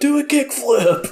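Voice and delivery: very high-pitched yelling. Retelling videos of Tony Hawk yelling out his window: imitating Tony Hawk yelling. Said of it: "Tony Hawk yelling out his window".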